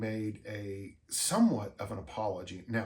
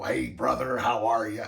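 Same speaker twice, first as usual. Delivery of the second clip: loud, raised voice, belted out; 5 dB louder than usual. Imitating how Hulk Hogan talked when they met: Hulk Hogan voice. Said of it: "he had the voice like this".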